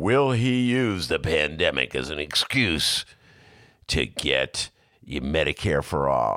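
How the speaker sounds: very deep, very low, ominous announcer promo narration. Mocking a TV show's promo about Bernie Sanders: The View ominous promo voice. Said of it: "the ominous voice saying".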